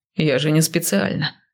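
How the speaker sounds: ordinary delivery, nothing marked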